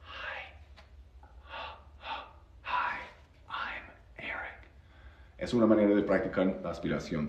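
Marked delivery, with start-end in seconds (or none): 0.0-4.7 slow, drawn-out, very soft whisper, barely voiced. Speaker demonstrates a way to practice the English H sound, whispering. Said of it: "You just need to whisper".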